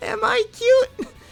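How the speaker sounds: very high, loud, scratchy put-on cute voice. Trying to be cute on purpose: scratchy high-pitched cute voice. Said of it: "This is me trying to be cute".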